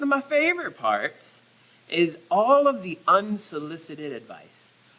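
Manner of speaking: completely sarcastic, swooping sing-song tone. Speaking to an audience about Christmas advice, sarcastic. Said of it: "I'm being completely sarcastic".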